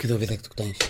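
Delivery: low, very soft, creepy, soft-spoken teacher voice.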